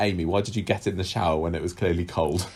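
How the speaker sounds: ordinary talk, nothing marked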